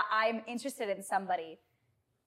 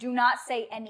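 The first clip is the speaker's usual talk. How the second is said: ordinary delivery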